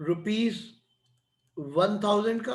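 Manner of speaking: slow, drawn-out, with long pauses. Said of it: "मैं धीरे धीरे बोलता हूँ".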